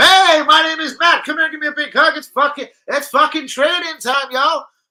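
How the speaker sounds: put-on loud American accent, pitched high. Imagining how Matt Turner talks to a teammate at training: Matt Turner American accent. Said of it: "he's got a wicked American voice".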